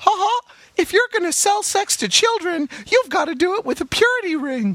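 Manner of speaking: sky-high cartoon mouse character voice. Retelling a South Park scene, quoting Mickey: Mickey Mouse voice. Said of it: "Mickey says".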